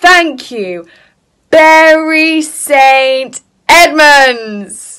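very slow, careful, syllable by syllable, st stretched. Retelling how the group said thank you at the end of the night, really slowly. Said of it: "we did it really slowly".

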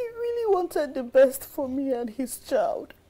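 speaking through tears, crying. Speaker recalls a man who died wanting the best for them: crying. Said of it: "please stop crying".

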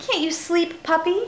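chirpy, high, bird-like twittering little voice. Narrator reads the bird, now awake, asking the puppy; twittering. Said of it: "she twittered".

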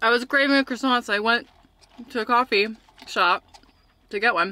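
talking while chewing. Speaker eating while telling a story, talking while chewing. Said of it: "I'm still chewing".

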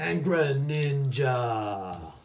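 slow, drawn-out wrestler drawl.

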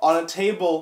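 plain

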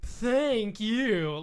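loud, small, grating, irritating cartoon voice. Mocking a video game's voice acting, in an annoying little Sonic voice. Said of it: "That annoying little like".

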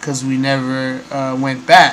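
ordinary talk

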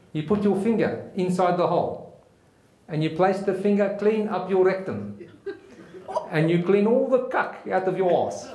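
put-on South African accent with drill-instructor delivery. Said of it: "I'm gonna try my best South African accent".

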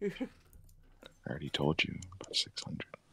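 hushed whisper. Chatting about anime late at night, whispering. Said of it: "you're whispering".

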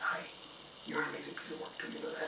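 soft, sweet, whispered, sweet-talking tone.

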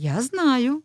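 tender. A mother answers her daughter's guilty confession, tender. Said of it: "лагідно мовила мама".

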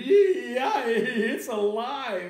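very high, loud, piercing scream. Narrator reading a story, a man reacting to a doll that just yelled: screaming. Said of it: "The man screamed".

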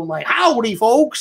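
imitated Western accent. Describing auditions for a midwestern character, imitating a real western accent. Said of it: "like real Western".

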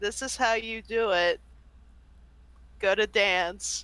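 mock-deadpan, flat, dry delivery. Speaker quotes a woman's line, retelling it in deadpan. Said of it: "She says it in the most deadpan tone".

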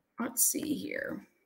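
soft, slow whisper to oneself.

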